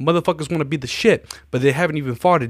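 put-on Italian accent. Retelling a man's daily quote of the day, in a put-on italian accent. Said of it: "In like an Italian accent".

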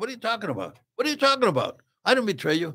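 high, swooping, repeated protesting tone. Telling a story, the speaker acts out the guy answering the angry agent, retelling a protesting denial. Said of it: "The guy goes".

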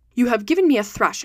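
plain reading voice

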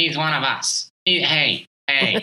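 put-on nasal screaming voice. Imitating Coach K screaming at the fans: Coach K nasal screaming. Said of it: "said in his nasal voice when he was screaming".

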